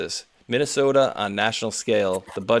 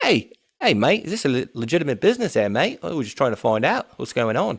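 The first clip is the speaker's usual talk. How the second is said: unconvincing, fake, pitched-up Australian accent; 3 semitones higher than usual. Man questioning people at a business; fake Australian accent yelling. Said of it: "a little yelling in Australia-ish".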